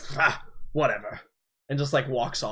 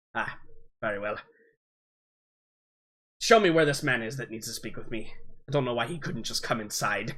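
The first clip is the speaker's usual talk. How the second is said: put-on elderly man's voice. Voicing an old man with a walking stick greeting a player: voicing an old man. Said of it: "and he's like".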